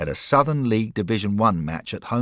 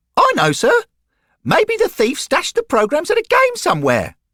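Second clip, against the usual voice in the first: very high, bright, innocent voice, rising along; 6 dB louder than usual. Narrator reads Derek answering Bill, in Derek's bright, innocent voice. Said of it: "in a bright, innocent voice that hadn't broken".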